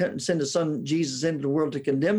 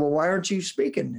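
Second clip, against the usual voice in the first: put-on heavy Southern drawl. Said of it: "he had a Southern drawl worse than mine".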